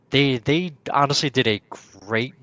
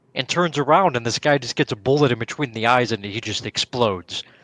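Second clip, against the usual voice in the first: usual speaking voice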